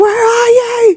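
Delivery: mock, very high, weeping, crying voice. Retelling a woman's phone call about an ambulance, imitating her crying. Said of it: "And she's crying".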